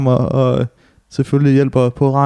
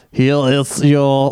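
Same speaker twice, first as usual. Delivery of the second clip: robotic, mechanical voice. Speaker retelling how a delivery man spoke, doing a robot voice. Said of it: "hvorfor han taler med robotstemmen".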